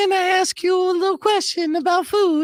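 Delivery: very high polite voice. Showing how to approach strangers so as not to seem a threat, voice raised an octave. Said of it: "always raise my voice at least an octave".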